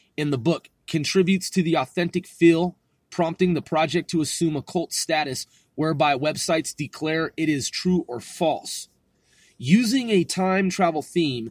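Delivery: plain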